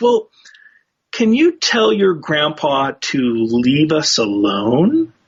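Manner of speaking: slow, embarrassed, bashful, sheepish. Retelling a psychic who blushed and smiled while asking: imitating an embarrassed, smiling request. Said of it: "she kind of blushed a little bit and smiled".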